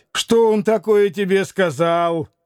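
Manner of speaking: grumbling irritably, cranky tone. Rakitin asks Grushenka what he told her, grumbling irritably. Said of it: "раздражительно проворчал Ракитин".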